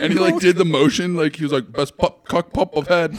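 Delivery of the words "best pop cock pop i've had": put-on British accent, put on and laid on thick. Retelling what a reality show contestant said: imitating thick British accent. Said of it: "spoke with the most thick British accent".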